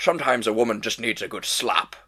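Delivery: put-on Scottish accent. Quoting an early Bond-era interview, Sean Connery accent. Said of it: "I'm going to do my best Sean Connery accent here".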